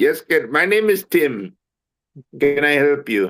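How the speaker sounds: put-on slow call-centre agent voice with Indian accent. Imitating a call-center agent answering the phone: imitating an indian call-center agent. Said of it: "we can't deal with the Indians".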